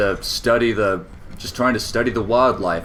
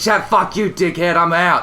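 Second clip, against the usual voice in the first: put-on Australian accent; 10 semitones higher, 4 dB louder than usual. Describing a funny video to a friend, you act out an animal's retort in a stereotypical Australian accent. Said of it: "with the stereotypical Australian accent".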